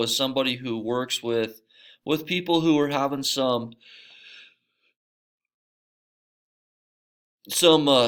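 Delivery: speaking through a yawn. Speaker explaining what a social worker does, yawning while talking. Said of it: "sorry, yawning again".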